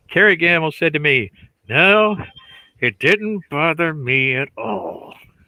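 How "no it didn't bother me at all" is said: very slow, forced out through clenched teeth. Retelling someone's answer about the inking of their work, imitating someone speaking through gritted teeth. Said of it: "through gritted teeth".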